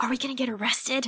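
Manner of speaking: hushed, half-whispered stage whisper. Retelling a scene of sneaking into a theater: imitating Quinn half-whispering. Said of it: "Quinn whispers".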